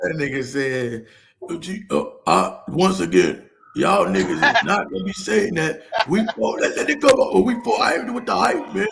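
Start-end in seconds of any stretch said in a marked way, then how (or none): 1.5-8.9 throaty, creaky, rough rasp from back of throat. Retelling what Izzy said, imitating Izzy's throaty voice.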